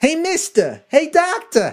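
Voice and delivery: bad, very high, swooping, stretched-out voice. Acting out a mask argument with Fauci, as Jerry Lewis: bad Jerry Lewis voice. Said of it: "I don't know if I have a great J-, Jerry Lewis".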